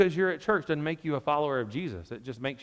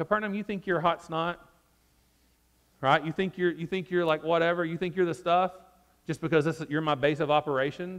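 acted mocking, taunting tone; 3 semitones higher than usual. Explaining a bible passage, voicing a taunt aimed at a city, retold mocking taunt. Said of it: "He's mockingly quoting Isaiah 14 here".

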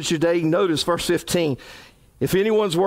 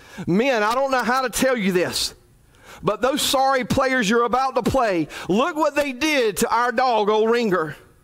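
voice trembling, high and quivering throughout; 6 semitones higher than usual. Retelling what a coach told his players in the locker room: retelling a quivering voice. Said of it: "with a quiver in his voice".

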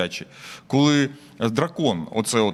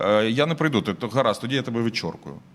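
ordinary delivery

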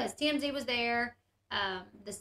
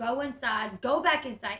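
put-on frustrated voice. Retelling a manager telling her to go back inside: imitating a frustrated order. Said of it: "there was frustration in his voice".

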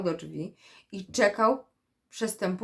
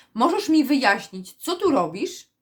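cross, demanding, angry, raised and high-pitched voice; 5 semitones higher, 5 dB louder than usual. Returning home, the beaver questions the turtle still playing there, angry tone. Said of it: "Zapytał gniewnym tonem Bóbr".

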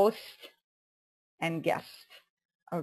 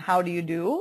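normal talking voice

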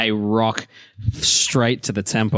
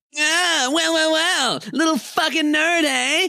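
very high, very slow jeering, taunting shout. A narrator voices robed boys berating a boy on the ground, bully shouting. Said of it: "You hear them shout".

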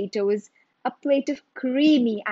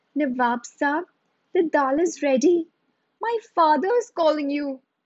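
shy, hesitant, timid, high voice; 6 semitones higher than usual. Reading a story aloud, a boy addresses the Nawab: timidly. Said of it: "said timidly".

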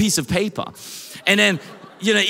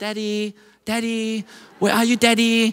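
put-on small child, little girl voice. A father imagines hiding while his daughter calls for him, imitating her little voice. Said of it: "I could hear her little voice".

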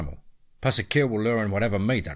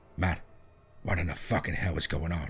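frantic, panicked whisper, lower and quieter; 4 semitones lower, 5 dB quieter than usual. Reading a story aloud, a terrified character speaks: frantic whisper. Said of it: "in a frantic whisper says".

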